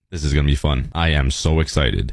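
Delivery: dry, sarcastic, unexcited voice. Facing hours of placing glass blocks: sarcastic, unexcited voice. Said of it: "You can just hear it in my voice".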